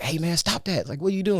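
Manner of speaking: mock irritated scolding. Retelling his granddad scolding him during a chess game, imitating someone angry. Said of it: "And he got mad at me".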